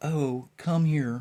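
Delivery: small, meek, timid and mild voice. Showing how God did not answer Moses, in a meek little voice. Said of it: "It wasn't this meek little".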